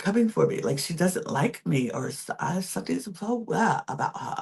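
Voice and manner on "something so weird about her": clumsy put-on British accent, pitched up. Repeating a line about someone seeming weird, in a bad british accent attempt. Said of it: "That's my attempt of a British accent".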